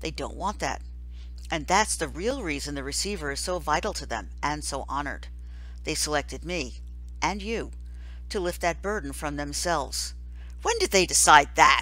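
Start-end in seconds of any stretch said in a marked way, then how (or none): 10.6-11.8 furious, angry, very loud voice. Reading Jonas's question to the Giver, angry. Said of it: "Jonas asked angrily".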